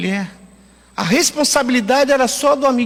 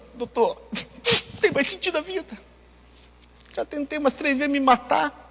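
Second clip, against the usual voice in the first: words spoken through weeping; 3 semitones higher, 7 dB quieter than usual. Retelling what a crying old man told him: imitating someone crying. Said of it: "falou bem assim, chorando".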